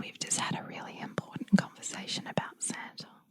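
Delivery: very quiet, hushed whisper. Retelling whispering to his dad in the kitchen: retelling a whisper. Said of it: "I whispered to his dad".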